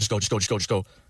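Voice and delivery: put-on panicked voice. Retelling a friend urging a getaway: imitating someone panicking. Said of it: "he starts fucking freaking out".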